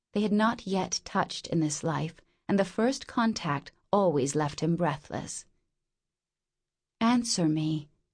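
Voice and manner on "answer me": whispered voice. A woman asks a man for an answer, whispering. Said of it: "she whispered".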